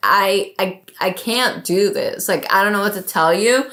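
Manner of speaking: acted tearful, pleading tone with crying. Retelling being lost without data, showing a man the phone: acting out tearful pleading. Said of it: "I'm like literally crying".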